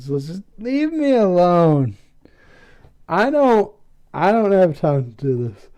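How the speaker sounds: put-on dejected, sad, withdrawn brush-off tone. Recapping a scene where Russell denies being a spy, Russell's sad tone. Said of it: "asks everyone to leave him alone in like a sad tone".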